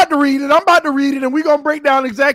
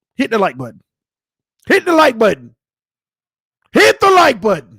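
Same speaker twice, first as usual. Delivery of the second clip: loud yelling, raised voice; 6 semitones higher than usual. The speaker urges viewers to hit the like button, yelling. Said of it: "I'm sorry if I'm yelling at you".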